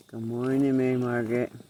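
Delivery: hoarse, deep, raspy, just-woke-up morning voice. Greeting mary margaret the next morning, in a deep raspy morning voice. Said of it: "I got this deep, raspy voice".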